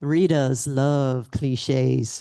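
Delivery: slow Southern drawl with stretched vowels. Recalling a former movie-critic colleague's remark, imitating Mal Vincent's Southern drawl. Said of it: "he had this Southern drawl".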